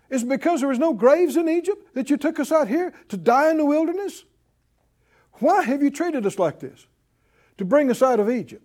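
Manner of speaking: put-on sarcastic disrespect. Reading the people's complaint to Moses aloud: imitating sarcastic disrespect. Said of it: "Listen to this sarcasm and this disrespect".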